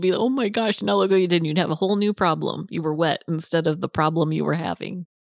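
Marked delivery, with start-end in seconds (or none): 0.1-1.4 put-on startled, shocked child's voice blurting out. Retelling the child's reaction to being splashed: imitating Parker shocked. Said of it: "it would just shock your world".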